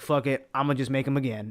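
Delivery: ordinary talk, nothing marked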